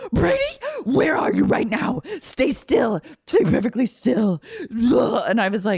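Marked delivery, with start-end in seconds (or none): 0.1-4.4 frantic, hysterical, high and swooping with panic. Retelling a mother's call to her son abroad; imitating Miranda's hysteria.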